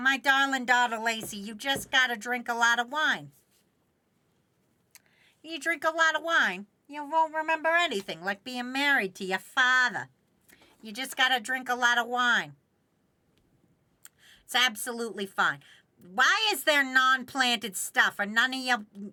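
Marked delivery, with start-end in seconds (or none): 0.0-15.6 put-on New Jersey accent. Answering a chat question as a mother to daughter Lacey: put-on New Jersey mom accent. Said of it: "I'm losing the accent".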